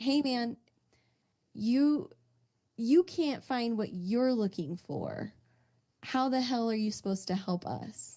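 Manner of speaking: very irritated, openly annoyed, leaning into drama. Player voicing a character who just got beaten up and saw a friend shot, very irritated. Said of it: "Like a very like irritated".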